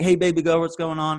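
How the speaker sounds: loud, fully committed put-on American accent. Retelling a man's phone call with his girlfriend, imitating an American accent. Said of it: "he's definitely American now".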